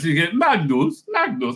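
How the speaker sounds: put-on thick Swedish accent. Describing a series where the husband is called Magnus, thick Swedish accent. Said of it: "very thick uh, uh, Swedish accent".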